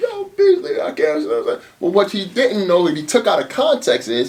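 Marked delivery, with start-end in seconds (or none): 0.0-1.2 very high, hoarse voice, sobbing through the words. A man retelling how his own voice sounded to beasley, imitating crying. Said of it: "The shit sound like I was crying like".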